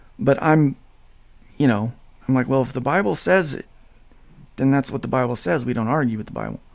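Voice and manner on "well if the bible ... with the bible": ordinary talk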